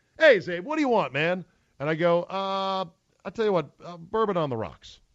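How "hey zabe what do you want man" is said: all happy, bright, chipper, pitched-up voice. Retelling a friend asking what he wants to drink, in a mock happy, chipper voice. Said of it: "all happy and chipper".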